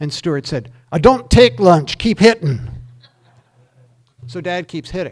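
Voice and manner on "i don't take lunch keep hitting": thick brogue, very loud and high in pitch. Telling a story about his dad at golf, as Stuart: thick brogue. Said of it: "with that thick brogue of his".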